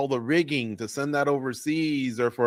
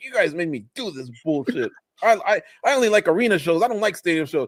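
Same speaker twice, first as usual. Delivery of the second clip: play-acted angry, fed-up, pissed-off grumbling; 4 semitones higher, 4 dB louder than usual. Imitating him as he complains: imitating someone pissed off. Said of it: "goes all pissed off".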